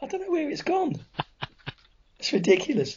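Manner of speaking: very high, squeaky voice, nearly gone. Greeting listeners at the start of a show, with a lost voice. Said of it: "I've lost my voice".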